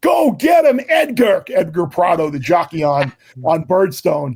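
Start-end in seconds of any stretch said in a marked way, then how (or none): 0.0-1.4 shrill, very high cheer at the top of the lungs. Retelling cheering on a jockey as his horse closes: imitating own yell. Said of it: "I'm yelling at the top of my young lungs".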